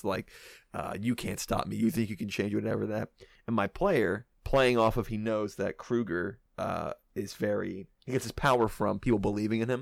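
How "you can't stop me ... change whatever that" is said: put-on mocking villain voice, taunting. Retelling how Freddy Krueger taunted a player from the abyss: imitating Freddy Krueger mocking. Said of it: "Kruger's just mocking him".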